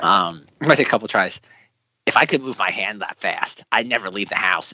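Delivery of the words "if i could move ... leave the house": put-on cartoon character voice. Taking a couple of tries at the particular cartoon voice, Butt-Head voice. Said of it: "I can do a butthead".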